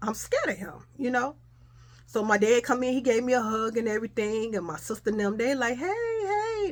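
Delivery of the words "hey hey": fake-cheerful, very high, stretched-out hey. Recalling family greeting at the house, a mock phony greeting. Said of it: "they so phony".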